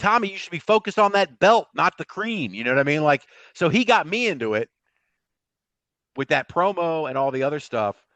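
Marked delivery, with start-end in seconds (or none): 0.0-2.5 mock, pitched-up shouting. Retelling watching a promo about the cream: retelling yelling at the screen. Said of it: "I'm sitting there yelling at the screen going".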